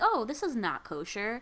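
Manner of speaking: ordinary talk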